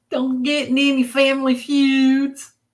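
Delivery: loud Southern accent, "feuds" drawn out. Answering a request to bring it out, in a Southern accent. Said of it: "I feel my Southern accent coming out".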